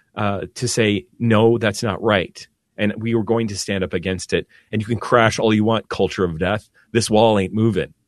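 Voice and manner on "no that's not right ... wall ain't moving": usual speaking voice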